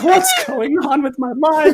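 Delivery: put-on very high, slow, teary drunk voice. Retelling own words on the toilet: retelling own drunk crying. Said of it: "crying because I'm so drunk".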